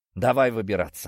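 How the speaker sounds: ordinary delivery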